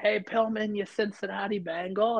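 mock high, taunting, heckling shouted yell. Telling a story, the speaker repeats what he yelled at Pillman, retelling a yell. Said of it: "I yell it out".

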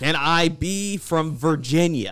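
attempted American accent. Retelling how a guest asked to play an American, in an American accent.

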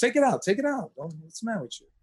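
tough Italian dad voice. Retelling what the father said while driving: imitating his tough Italian father. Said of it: "my father's, like, this tough Italian guy".

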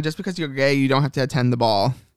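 usual speaking voice

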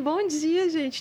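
put-on shy tone. Recalling walking in among the crew one morning, retelling a very shy greeting. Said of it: "tímida para caramba".

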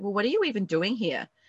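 put-on snide, rude, condescending delivery. Retelling what she said after storming in: imitating a condescending woman. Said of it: "she was so rude and condescending".

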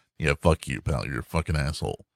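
brash, swaggering tough-guy bravado. Retelling how Jet talks to everyone: imitating Jet's bravado. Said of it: "drop the bravado".

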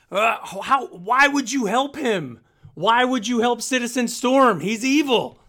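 slow, very high, loud, drawn-out yell. In a game, a woman held back by the player yells at them, yelling. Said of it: "she's just yelling like".

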